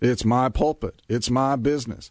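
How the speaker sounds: put-on Southern preacher voice. Imitating pastors and business owners, in a Southern Baptist voice. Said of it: "You sound like a Southern Baptist there".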